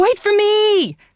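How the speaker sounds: very high, crying out. A girl calls after a boy who scurried up a tree: crying out. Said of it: "cried Marie".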